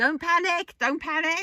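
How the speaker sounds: shrill, very high, very loud shout. Picturing a character reacting to bad news: Private Jones impression. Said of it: "Private Jones in the corner of my head going".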